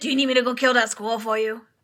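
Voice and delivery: put-on old-timey newspaper boy patter. Speaker voicing how they imagine a wiry-haired fellow talks: 1940s newsie voice. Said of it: "like he's a newsie from the forties".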